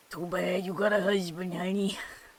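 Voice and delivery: put-on elderly New York man accent. A streamer doing voices for chat, in an old new york man accent. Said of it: "My old New York man accent".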